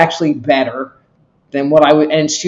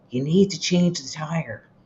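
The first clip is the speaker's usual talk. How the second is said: small, soft little voice; 10 dB quieter than usual. Imitating the car's warning message, in a little voice. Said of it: "I would get this little".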